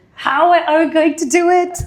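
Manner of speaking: acted, high, drawn-out scream full of despair. Acting out a founder back home after saying yes: imitating a scream.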